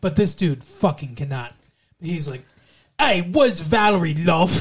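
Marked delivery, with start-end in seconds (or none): 3.0-4.6 exaggerated, bad, butchered fake Australian accent. Imitating a guy who cannot do the accent: bad fake australian accent. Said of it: "I'm going to do my best to imitate the butchering that he did off the Australian accent".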